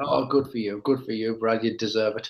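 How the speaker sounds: heavily sarcastic, insincere tone. Replying to someone who says they've been drinking: really sarcastic. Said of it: "that sounded really sarcastic".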